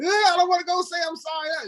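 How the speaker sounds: put-on squeaky, childlike little-kid voice, very high. Retelling refusing the therapist's advice, imitating a little kid. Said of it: "I was like a little kid in her office".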